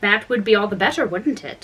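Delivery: plain reading voice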